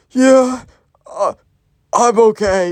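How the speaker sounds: very slow, high, acted near-death voice. Retelling a sick-looking Gen Z kid's reply to "are you good": imitating someone sounding near death. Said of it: "in the most not okay way manner".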